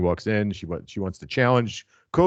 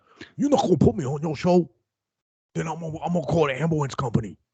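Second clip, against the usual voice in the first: put-on New York accent, pitched up; 7 semitones higher than usual. Acting out a rumored culprit's words again after pointing out the accent, put-on new york accent. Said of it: "That's a New York accent".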